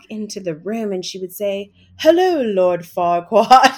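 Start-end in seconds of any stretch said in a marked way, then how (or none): 2.0-3.8 very loud put-on British accent. Retelling how someone greeted a child with a bad haircut: imitating a british accent. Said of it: "she would speak in a British accent".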